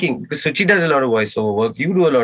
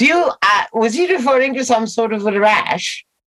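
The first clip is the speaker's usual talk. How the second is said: very high-pitched, fake British accent; 9 semitones higher than usual. Joining the British-accent bit, replying to the other speaker in a put-on British accent. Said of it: "in your British accent".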